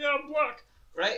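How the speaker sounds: put-on very high, shrill yelling with East London accent. Retelling a guy who walked into the kitchen, retelling a guy's yelling. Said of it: "fucking yelling".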